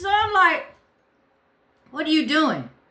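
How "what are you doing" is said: mock forceful, firm, strong, commanding tone. Retelling confronting a stranger in a kitchen: imitating own strong commanding voice. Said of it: "this strong, uh, voice to her".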